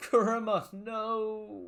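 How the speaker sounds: crying, very high, tearful, with "no" drawn out. Signing off a video while still tearing up, crying out, tearful. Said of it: "I'm still just tearing up".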